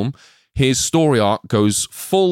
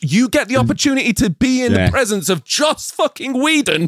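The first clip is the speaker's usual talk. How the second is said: put-on furious ranting, higher pitch; 12 semitones higher than usual. Retelling an imagined scene of a director chewing out an intern: imitating Joss Whedon chewing out an intern. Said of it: "Chewing out some intern".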